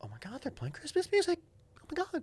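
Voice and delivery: very high, swooping, shocked woman's voice. Speaker recalls a lady caught off guard, doing an impression of her. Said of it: "That's my impression of her".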